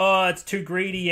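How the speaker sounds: usual speaking voice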